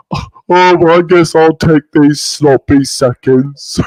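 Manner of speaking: thick-headed, dim-witted, oafish voice. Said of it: "why are you making him sound like a oaf?".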